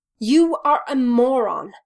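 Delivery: slow words spoken through a clenched jaw. Reading a story, Styles speaks to Derek through gritted teeth. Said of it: "he says through gritted teeth".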